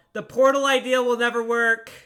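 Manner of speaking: high, very loud, hollered-out yell. Voicing a witch calling out that the portal idea will fail: yelling. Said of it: "she yells out".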